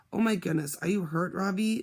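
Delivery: plain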